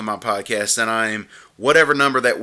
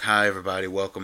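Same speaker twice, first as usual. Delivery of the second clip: flat, low-energy voice, lower and quieter; 3 semitones lower, 6 dB quieter than usual. Speaker demonstrates the low-energy intro they did not want listeners to hear. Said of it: "I didn't want that low energy".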